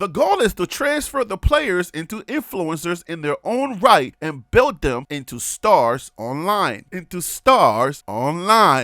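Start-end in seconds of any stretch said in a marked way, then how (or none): 0.0-6.8 announcer-style news-anchor broadcast reading voice. Continuing to read an article aloud to the audience, broadcast voice. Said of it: "Keep it going, broadcast voice".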